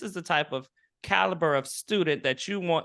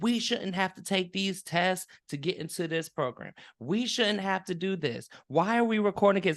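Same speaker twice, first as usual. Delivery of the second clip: put-on woman's yelling, agitated, worked-up ranting tone; 2 semitones higher than usual. Retelling how a young woman yelled at the professor, imitating a woman yelling. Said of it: "Like she's yelling at him".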